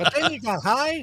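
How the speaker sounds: high squeaky sidekick voice. Quoting a line as Robin, squeaky voice. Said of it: "Was that your Robin?".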